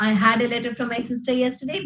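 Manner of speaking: plain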